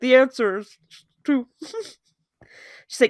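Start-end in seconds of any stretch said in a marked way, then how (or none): 0.0-1.5 mock mouth-full voice, higher and slower. Retelling how Derek answered her while eating a sandwich, imitating Derek's mouthful voice. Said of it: "And he's just there with his mouthful".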